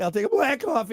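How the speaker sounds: voice cracking. Retelling ordering coffee to impress a girl, imitating own voice cracking. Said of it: "my voice cracks while I'm ordering it".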